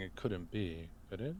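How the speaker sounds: hushed, very quiet mutter under breath. In character during a shared story scene, muttering under breath. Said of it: "Under my breath, I'm going to just start muttering".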